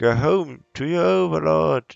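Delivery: loud, high-pitched bellow with a crackle. Narrating a story, a voice calls from the rooftops, bellowing with a crackle. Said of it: "A voice bellows from the rooftops with a crackle".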